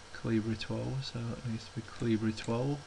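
muttering under breath. Talking himself through formatting a text box: mumbling to self. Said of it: "Sorry if I'm mumbling to myself".

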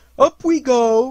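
very loud, high, cheery, cheerful voice. Pooh, holding the string as Piglet rises toward the ceiling, cheerful. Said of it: "said Pooh cheerfully".

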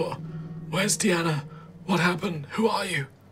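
desperate raspy voice. Voicing a painfully wounded man waking as if from a fever, desperate rasping. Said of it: "desperate rasping".

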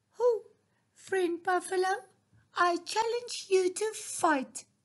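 tiny, small, high, squeaky mouse voice. Narrator reads the mouse challenging the buffalo: small squeaky voice. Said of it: "exclaimed in a small squeaky voice".

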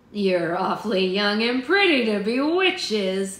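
loud, sneering, mocking jeer. A witch hunter speaks to the young captives his men surround, sneering. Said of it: "the man in yellow sneered".

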